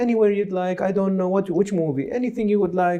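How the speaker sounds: high-pitched, dithering, indecisive voice. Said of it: "I see how people are so indecisive".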